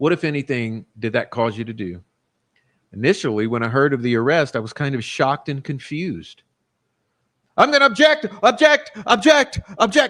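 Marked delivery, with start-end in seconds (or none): 7.6-10.1 panicky, high, loud, frantic freaking-out babble. Retelling how McClellan objects: imitating McClellan freaking out. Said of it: "freaking out".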